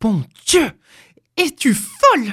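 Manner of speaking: aghast, appalled cry of disbelief, pitched high. Sitting up in bed, the husband answers his wife's demand: cried out, appalled. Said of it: "s'écria-t-il atterré".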